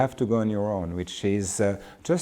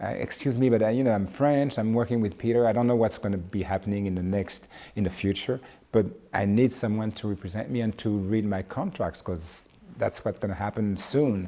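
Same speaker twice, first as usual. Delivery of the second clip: normal talking voice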